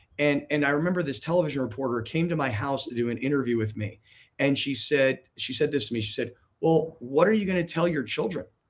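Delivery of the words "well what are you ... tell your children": put-on judgmental tone. Retelling what a television reporter asked during an interview, mimicking a judgmental tone. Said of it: "Like this very judgmental tone".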